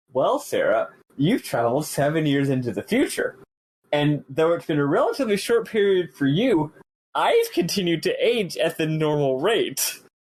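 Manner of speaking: very condescending, patronizing, over-explaining tone. Reading a script screenshot aloud, voicing Hope's line: condescending Hope voice. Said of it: "Hope says in a very condescending voice".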